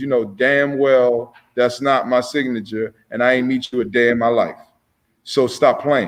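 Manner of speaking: ordinary talk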